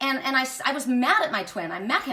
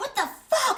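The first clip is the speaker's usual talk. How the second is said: put-on very high, scared and angry blurt; 12 semitones higher than usual. Retelling what a man said after their rolling car stopped, imitating an angry man. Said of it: "Like he was like angry".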